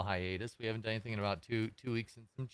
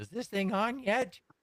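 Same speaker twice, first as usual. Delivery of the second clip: put-on shrill, high, loud old-lady grandma voice; 11 semitones higher, 5 dB louder than usual. At the start of a podcast recording, imitating my grandma. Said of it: "like my grandma going".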